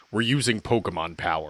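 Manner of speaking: play-acted solemn, grave official announcement tone. Retelling a movie scene, quoting the mayor's answer: imitating a solemn announcement. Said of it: "he just very solemnly goes".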